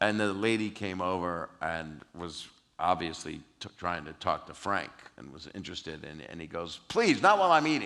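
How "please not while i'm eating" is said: put-on yell, higher and louder. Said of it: "he yells at the lady".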